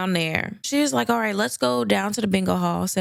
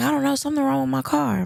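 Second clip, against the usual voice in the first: put-on confused old-lady voice; 5 semitones higher than usual. Telling a story about a stranded elderly driver, quoting her: imitating a confused old lady. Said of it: "She's like".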